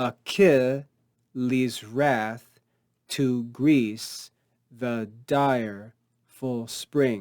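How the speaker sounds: slow, measured, stress on every second syllable. Reading a verse line to show its iambic feet, slow, stressing every second syllable. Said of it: "read this a little more slowly and uh, with a bit more emphasis on the structure, focusing on these iambic feet".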